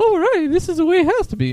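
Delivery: squeaky high voice with pitch swooping up and down. Describing how a character talks when things go wrong: King Candy voice. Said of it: "you could tell in his voice where he's like".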